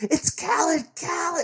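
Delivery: mock very high, shrill, frantic, freaked-out screaming. Retelling an injured brother answering a fireman, imitating brother screaming his name. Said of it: "And he's screaming".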